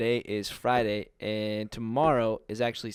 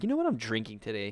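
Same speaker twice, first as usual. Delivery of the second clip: normal talking voice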